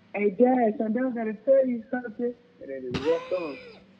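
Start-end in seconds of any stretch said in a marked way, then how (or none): 0.1-2.3 blurted, high, hollered shout. Retelling how his brother yelled to their dad, imitating a yell. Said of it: "He just yells".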